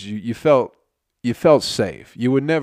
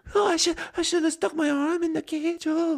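put-on quieter Bangladeshi accent; 4 dB quieter than usual. Retelling a video clip to friends in a put-on Bangladeshi accent. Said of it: "that's a good Bangladeshi accent".

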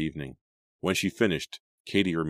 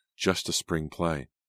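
ordinary delivery

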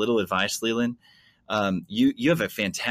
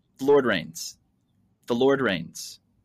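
put-on American accent delivery. Showing how American musicians would deliver a worship phrase, American accent. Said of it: "American accent".

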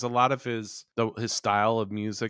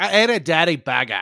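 very loud, high put-on Cockney accent; 7 semitones higher, 10 dB louder than usual. Show a friend how you once heard her talk, imitating her Cockney-like accent. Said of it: "Cockney kind of side to her accent".

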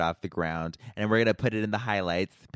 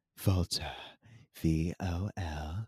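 soft, slow spelling-bee style spelling. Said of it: "imagine Kim in a spelling bee".

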